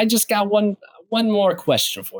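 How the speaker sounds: very high-pitched, laid-on put-on Brooklyn accent. Doing an impression of a TV detective asking one more question: Peter Falk impression. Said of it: "I'm not doing that far off of an impression of him".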